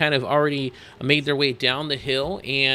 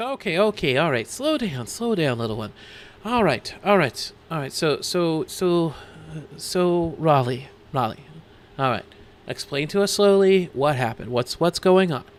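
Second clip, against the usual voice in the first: calm, soothing, slowed-down voice. As Pepper, comforting an upset, stammering player character: calming and soothing. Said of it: "pats you on the back and says".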